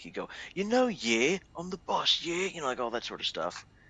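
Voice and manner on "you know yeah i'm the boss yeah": higher, dopey, dim, boastful village idiot voice. Describing a crew leader who walked up to them, the speaker mimics him in a dim village idiot voice. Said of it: "this is how he would speak... he's not a regular U K guy... He's a village idiot".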